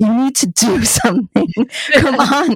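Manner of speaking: put-on yelling. Retelling a scene of yelling at a partner: imitating yelling at a partner. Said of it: "I start yelling at my partner".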